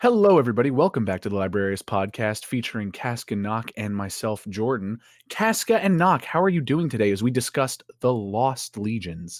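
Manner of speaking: smooth, buttery host voice. A podcast host opens the episode and greets the co-hosts: buttery voice. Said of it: "let me get my voice buttery".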